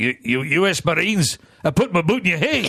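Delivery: put-on old Glaswegian man's accent. Retelling a cab encounter, the speaker quotes a seventy-year-old man in a Glaswegian accent. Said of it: "it's Glaswegian".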